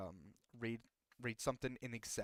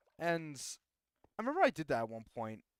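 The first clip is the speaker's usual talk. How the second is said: ordinary talk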